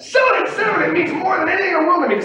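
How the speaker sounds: shrill, very high, loud pit-trader scream. Acting out a pit trader offering to sell: imitating a trader screaming. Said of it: "And I'm screaming it and screaming it".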